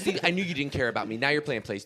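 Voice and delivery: mock argumentative voice. Acting out a girlfriend arguing with a partner: imitating an arguing girlfriend. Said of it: "That's what girlfriends do before they argue with you".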